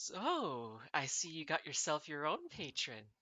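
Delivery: ecstatic, swooping, patronizing yet friendly gush. Retelling what a grinning woman said, in mock condescending yet friendly tone. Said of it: "says ecstatically in like this very like condescending yet like friendly tone".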